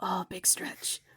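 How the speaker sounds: soft, hushed, murmured whisper under the breath. Describing what they do when the creatures do a big stretch, whispering under breath. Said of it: "I'm like whispering under my breath like".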